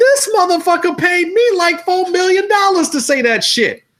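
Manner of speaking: very high, pushed-up movie-star voice. Explaining why the actor let Quentin Tarantino come to movies, Sam Jackson voice. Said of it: "you got to do your Sam Jackson voice?".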